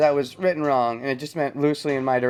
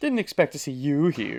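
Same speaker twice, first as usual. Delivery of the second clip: haughty, stuck-up, snooty, snobbish tone. Trying out a game character's line in that voice: imitating a snooty voice. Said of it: "That snoopy, s-, snooty voice".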